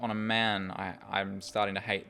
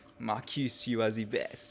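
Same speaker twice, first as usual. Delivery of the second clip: put-on French accent.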